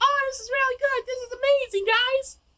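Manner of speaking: very high-pitched, talking-down, condescending voice. Retelling what a woman said, the speaker imitates her high-pitched condescending voice. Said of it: "the really high pitched condescending voice".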